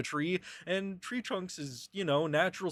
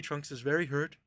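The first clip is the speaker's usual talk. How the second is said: usual speaking voice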